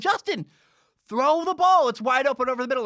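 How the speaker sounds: shrill, very high, very loud screaming. Speaker reenacts yelling at the computer monitor while watching film, retelling own screaming. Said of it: "I'm screaming at my computer monitor going".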